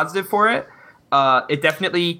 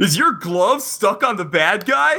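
slow, pitched-up movie narrator voice; 6 semitones higher than usual. Asked by the others to do a line in the CinemaSins voice. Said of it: "You gotta say it in the Cinema Sins voice".

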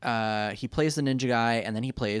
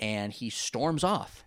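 ordinary delivery

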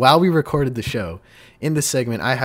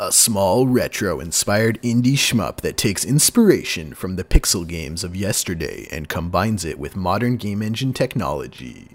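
movie trailer narrator voice, lower pitch; 4 semitones lower than usual. Introducing an indie game from Calgary, movie trailer voice. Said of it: "movie trailer voice, ready?".

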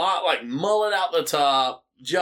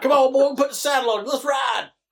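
put-on cowboy country accent, laid on, pitched up; 9 semitones higher, 3 dB louder than usual. Commentating a wrestling match, urging the wrestler on in a put-on country accent. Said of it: "I should just use my regular accent. It's country enough".

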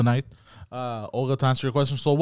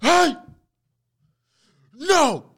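put-on yelling, raised pitch; 11 semitones higher than usual. Retelling telling a dog off: retelling a yell at a dog. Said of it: "Like this".

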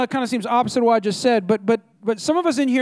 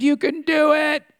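mock, drawn-out, stretched hype-man style scream; 4 semitones higher than usual. Retelling a speaker at a conference: imitating someone screaming. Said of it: "he screamed".

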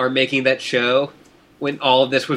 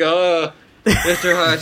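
groggy put-on voice, slightly higher pitch; 4 semitones higher than usual. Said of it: "Jennifer Hale, like, took NyQuil".

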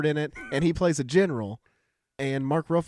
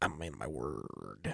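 very deep, very soft, rough, creaky, slow drawl; 14 dB quieter than usual. Repeating a Heath Ledger Joker impression on request: Heath Ledger Joker voice. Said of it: "Do it again".

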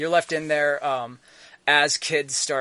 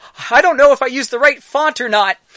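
very high, loud, alarmed, freaked-out outburst; 10 semitones higher, 11 dB louder than usual. Game master voicing a character the players are calming down, very freaked out. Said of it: "she seems very freaked out".

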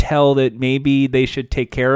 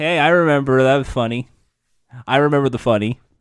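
strained, forced, put-on cheerful laughing voice. Imitating show hosts who must smile and laugh: imitating a forced smiling laugh. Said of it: "they have to smile and laugh and go".

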